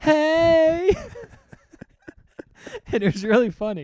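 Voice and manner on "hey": high, loud group shouting. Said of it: "all his friends are like".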